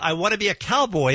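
ordinary delivery

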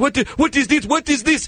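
high, panicked, freaking-out voice.

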